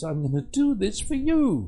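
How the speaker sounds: thrilled and swooping. Showing how they'd promise to do something for a child, excited. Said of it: "I can't say that without an excitement in my voice".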